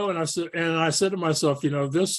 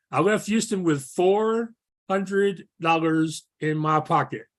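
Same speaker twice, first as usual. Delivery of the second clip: very slow, drawn-out, deliberate, every word given weight. A host recounting leaving Houston with little cash, saying it really slowly. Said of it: "I'm saying that really slowly".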